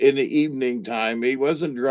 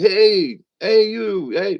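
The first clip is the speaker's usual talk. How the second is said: mock, pitched-up hollering call; 8 semitones higher, 4 dB louder than usual. Retelling a stranger calling out to the speaker while getting gas, imitating a guy hollering. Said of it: "he was kind of hollering like across".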